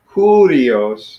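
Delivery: curios starting high, sliding down in pitch. Contrasting how two words are accented: high falling pitch on curios. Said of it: "where it kind of comes starts high and comes down".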